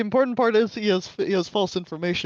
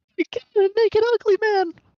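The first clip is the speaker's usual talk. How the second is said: high, shrill shriek with voice pushed way up; 4 dB louder than usual. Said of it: "Go and start screaming".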